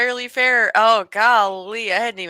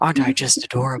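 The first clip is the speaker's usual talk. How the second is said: smooth, breathy voice, much lower; 11 semitones lower than usual. Demonstrating one of a performer's character voices, confident and breathy as Bruce Wayne. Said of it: "very confidently and breathily speaking".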